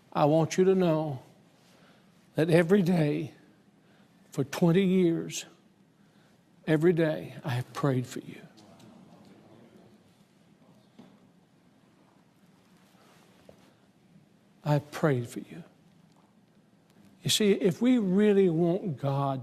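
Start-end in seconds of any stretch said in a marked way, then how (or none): 0.1-15.6 mock faltering, broken voice giving way. Retelling what the mayor said at his desk: imitating a broken voice. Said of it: "with a broken voice".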